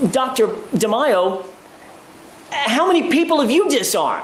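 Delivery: disbelieving, rising pitch. Recounting questioning a doctor during testimony, retelling an incredulous question. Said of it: "In an incredulous tone of voice".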